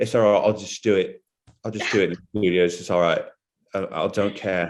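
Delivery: unbothered, shrugging put-on voice, tossed off carelessly. Retelling how an actor recorded in a studio: Ricky Gervais impression. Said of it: "Killer impression, [name]".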